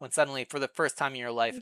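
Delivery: ordinary delivery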